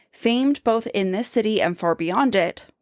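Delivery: ordinary delivery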